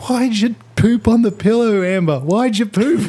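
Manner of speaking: mock, very high, shrill, shouted yell. Retelling a courtroom clip where a woman yells at Amber Heard; retelling a woman's yell. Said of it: "some woman yells".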